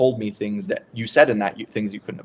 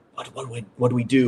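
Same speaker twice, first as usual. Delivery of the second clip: put-on whisper. Retelling a dream of people in a corner, imitating whispering.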